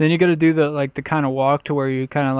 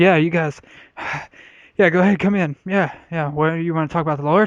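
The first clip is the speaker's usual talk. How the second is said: put-on out-of-breath huffing and puffing; 3 semitones higher than usual. Acting out answering the door to visitors, acting out of breath. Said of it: "all out of breath, huffing and puffing".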